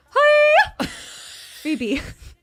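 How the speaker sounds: very high, loud, swooping puppet voice. After trying Kermit the Frog, speaker does Miss Piggy voice. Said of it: "I'll do Miss Piggy".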